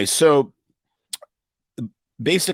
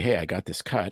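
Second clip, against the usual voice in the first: ordinary talk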